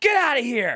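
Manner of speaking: high, mild, half-voiced yell. Retelling charging at a coyote at night: imitating himself screaming. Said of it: "I'm screaming at it".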